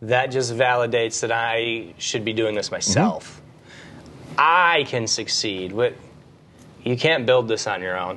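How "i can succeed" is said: emphasis landing hard on the word I. Repeating the sentence with the emphasis put on the word I: stress on I. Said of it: "if I put the emphasis on the I".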